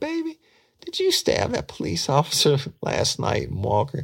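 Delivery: very high-pitched motherly mama voice. Retelling how a suspect quoted his mother's question, imitating his mother's voice. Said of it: "and he did her voice".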